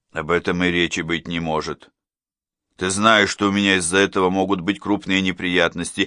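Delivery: plain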